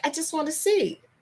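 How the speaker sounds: put-on small child's high, babyish way of talking. Retelling a young daughter's words at a hot stove: imitating a little baby voice. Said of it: "in her own little baby way".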